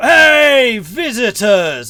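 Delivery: big, booming, very loud, high shout, drawn-out hey. Visitors enter the mead hall and someone greets them with a big shout. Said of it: "there is a big shout".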